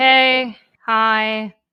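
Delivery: loud, irritated, annoyed voice. Reading out a text message greeting, imitating a pissed-off hi.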